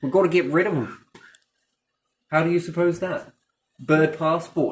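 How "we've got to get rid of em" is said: put-on, attempted Australian accent. Joking about birds migrating into the country: Australian accent. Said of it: "working on my Australian accent there".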